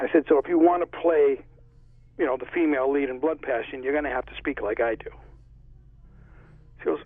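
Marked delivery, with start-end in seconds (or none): none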